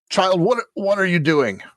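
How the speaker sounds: put-on high-pitched elderly man voice. Voicing an old priest woken in bed by a child: old man character voice. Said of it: "Old men move so slowly".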